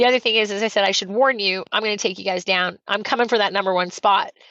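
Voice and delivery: ordinary talk, nothing marked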